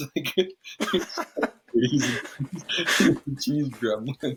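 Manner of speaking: drawn-out, very slow little gremlin voice. Telling a funny story, the speaker shows how the man talks, imitating Antonin Barreau. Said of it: "You kind of talk like this".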